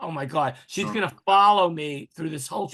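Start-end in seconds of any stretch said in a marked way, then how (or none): none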